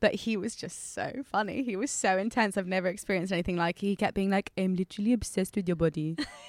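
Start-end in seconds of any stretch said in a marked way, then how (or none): 4.6-6.2 English spoken with a put-on French accent. Retelling what an intense french man kept saying, the speaker uses a french accent. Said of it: "I'm going to my French accent now".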